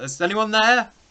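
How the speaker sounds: very high, loud shouting. Caught aboard a ship, a character calls to anyone above, shouting up to the grate. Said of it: "I'm going to start shouting like up to the grate".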